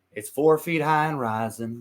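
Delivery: fake, put-on country accent. Planning a home video, showing how Mari will answer, put-on accent. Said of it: "could do that accent though".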